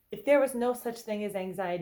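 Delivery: ordinary delivery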